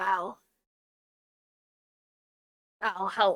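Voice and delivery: hushed, beaten, worn-out, very quiet flat croak. Telling the story, the speaker voices a familiar voice croaking out to val: beaten, tired croak. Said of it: "It sounds beaten and tired, exhausted, and it just is able to croak out".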